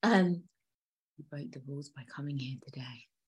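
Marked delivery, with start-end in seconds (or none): 1.2-3.0 barely above a hush, theatrical, dramatic acted delivery. Retelling how Anna confronts the dad in the alley: acting out Anna's line. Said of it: "my acting is on point".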